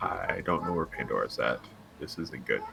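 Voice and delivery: low, very quiet mutter under the breath. Grabbing a companion's arm and speaking in character, under the breath. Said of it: "just under my breath".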